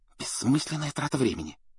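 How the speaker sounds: scornful, hushed hiss. Narrator reads Hermione's reply to Ron and Harry: hissed. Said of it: "прошипела Гермиона".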